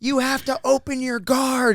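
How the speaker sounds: mock, very high-pitched, shrill shouted yell. Retelling someone shouting during a tournament match: imitating Dave yelling. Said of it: "Dave starts yelling".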